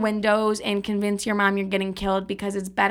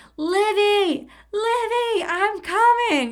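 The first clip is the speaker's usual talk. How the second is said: shrill, very high, slow, long-stretched drawn-out scream; 12 semitones higher than usual. Telling a story, acting out her mom running up the stairs: retelling her mom's scream. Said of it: "I hear her screaming".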